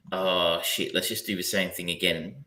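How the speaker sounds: ordinary delivery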